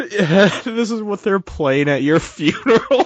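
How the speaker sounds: very high talk breaking into laughter. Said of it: "I can't stop laughing".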